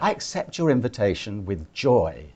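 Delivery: normal talking voice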